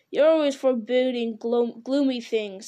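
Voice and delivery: ordinary delivery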